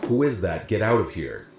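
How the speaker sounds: normal talking voice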